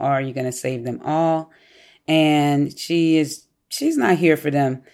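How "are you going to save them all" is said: ordinary talk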